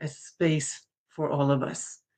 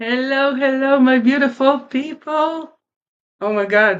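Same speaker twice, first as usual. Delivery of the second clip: tearful, crying, pitched up high; 9 semitones higher, 6 dB louder than usual. Host greeting the audience at the very start of the show: tearful. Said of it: "that's not how you're supposed to start a show crying".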